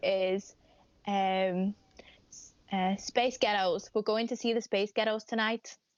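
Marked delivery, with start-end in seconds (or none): 3.0-5.8 limited, poor attempt at a Scottish accent. Asked to do a woman's Scottish accent, the speaker attempts it. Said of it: "That's all I can say is Scottish".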